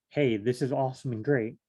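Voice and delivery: plain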